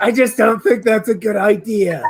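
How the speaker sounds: loud stage whisper. In a tabletop game, a character answers the party, loud stage whisper. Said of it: "he's whispering very loudly".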